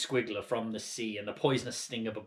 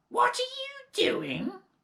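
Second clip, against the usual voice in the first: loud, screechy, shrill, very high shriek; 5 dB louder than usual. Narrator reading Grandma calling to George from the next room, shrill voice. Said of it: "came the shrill voice".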